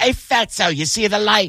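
put-on high pitch, accidentally drifting into a British accent. Retelling a heckle from a comic on the dais: terrible Bobby Kelly impression. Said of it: "your Bobby impression now was terrible".

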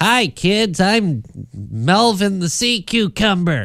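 very high, slow, goofy, kooky cartoon kids'-show voice. Voice actor showing the kind of voice they first try for a character, kooky voice. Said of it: "I'm going to do like a kooky voice".

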